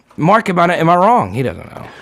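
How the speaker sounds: normal talking voice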